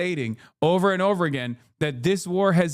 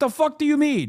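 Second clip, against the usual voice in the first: normal talking voice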